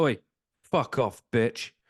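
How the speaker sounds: loud, blunt shout, stopping dead. Retelling stopping dead when someone walked straight at them, re-enacting their own shout. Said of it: "I stopped dead and went".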